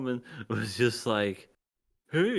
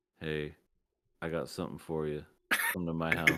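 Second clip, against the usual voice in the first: play-acted, very low, dead-level, emotionless monotone; 7 semitones lower, 6 dB quieter than usual. Imitating a woman luring someone with no emotion in her voice: imitating a flat, emotionless voice. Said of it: "doesn't even just have any emotion in her voice".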